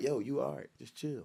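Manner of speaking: calm, very quiet, barely audible. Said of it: "in a calm voice".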